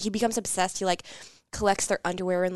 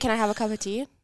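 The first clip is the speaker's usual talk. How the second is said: normal talking voice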